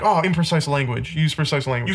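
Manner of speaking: ordinary talk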